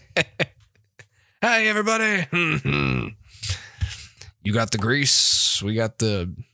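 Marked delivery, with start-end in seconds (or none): 1.4-6.3 put-on gravelly male Southern accent, salesman pitch style. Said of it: "can't add any more gravel to my voice".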